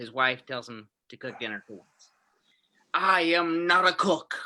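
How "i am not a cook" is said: very slow, deliberate, every word stretched out. Acting out his wife telling him to cook dinner for once: Richard Nixon impression. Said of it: "Richard Nixon".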